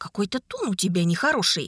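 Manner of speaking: plain reading voice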